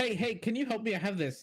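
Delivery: very high, eager, excited burst. Bruno comes out to ask a dwarf at his metalwork for help, excited Bruno voice. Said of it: "Bruno excitedly claims comes out and just says".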